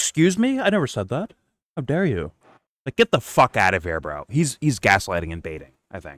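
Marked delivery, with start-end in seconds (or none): 0.0-2.3 put-on very high, offended, indignant voice. Mocking how a commentator reacts when challenged: imitating indignant denial. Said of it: "are you baiting people to be like".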